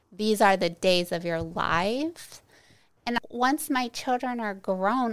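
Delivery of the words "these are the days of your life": ordinary talk, nothing marked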